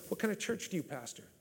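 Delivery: mock attitude voice. Retelling what a man asked the speaker on coming out of his office, with attitude. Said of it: "Kind of like with an attitude".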